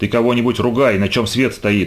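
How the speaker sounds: plain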